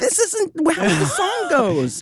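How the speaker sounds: very high, angry, furious shout. Retelling yelling at the guy playing, who skipped the guitar solo: retelling a yell. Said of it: "I was yelling at the guy".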